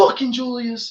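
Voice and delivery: high-pitched yelling. Retelling a hot mic moment with Julius Thomas: imitating Peyton Manning yelling. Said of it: "when he yelled at Julius Thomas".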